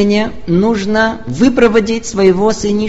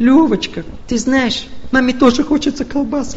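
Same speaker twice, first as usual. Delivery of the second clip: plaintive, weepy, whiny, tearful voice; 3 semitones higher than usual. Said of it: "таким, знаете, плаксивым голосом".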